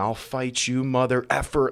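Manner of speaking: imitated heavy Russian accent. Retelling what a boat owner said in a viral video, thick russian accent. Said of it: "in a very thick Russian accent".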